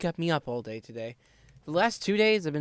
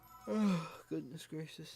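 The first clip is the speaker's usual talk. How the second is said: yawning, much quieter; 12 dB quieter than usual. Double-checking something, then suddenly yawning. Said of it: "Now I'm yawning".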